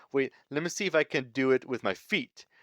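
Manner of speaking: usual speaking voice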